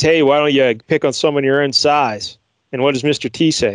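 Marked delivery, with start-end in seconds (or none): none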